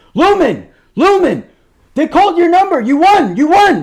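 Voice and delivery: very high, shrill, loud, excited, freaked-out yelling. Retelling how the dad yelled about a raffle number: imitating dad yelling. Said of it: "he's yelling for Lumen".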